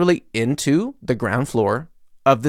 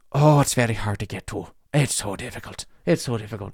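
put-on Irish-sounding accent throughout; 2 semitones lower, 4 dB quieter than usual. Retelling how a man explained a hard-to-find spot, in an Irish accent. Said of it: "He sounded Irish".

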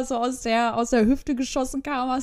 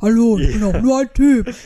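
very loud, deep put-on guy voice, rising; 2 semitones lower, 8 dB louder than usual. Imitating a smiling guy introducing himself, in a put-on deep voice. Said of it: "in dieser Stimmlage".

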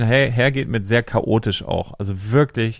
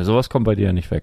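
put-on deadpan dry delivery, much lower pitch; 3 semitones lower than usual. Retelling a remark that made the speaker laugh, retelling a deadpan remark. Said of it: "Es war so trocken".

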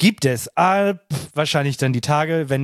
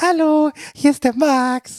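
shrill, faked, high, slow disguised voice; 11 semitones higher than usual. Making up a question himself and asking it in a disguised voice. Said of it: "Ich kann auch meine Stimme verstellen und sagen".

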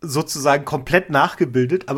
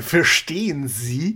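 exaggerated, put-on caricature of a foreign accent. Retelling what someone said about chinese speakers, imitating someone's voice. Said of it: "Das war gerade eine sehr gute Imitation von verstehen sie".

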